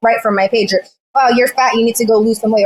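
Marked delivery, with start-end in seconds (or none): none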